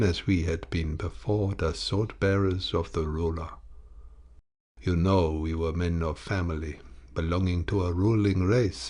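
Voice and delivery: ordinary delivery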